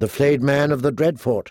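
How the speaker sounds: usual speaking voice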